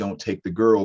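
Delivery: normal talking voice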